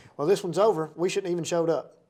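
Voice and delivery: ordinary talk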